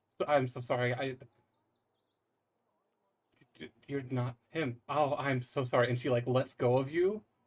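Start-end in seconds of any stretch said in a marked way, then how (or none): 0.3-5.9 distraught and upset, voice in shambles. A woman realizes the person she is holding is not him, distraught apology. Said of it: "she is just kind of in shambles".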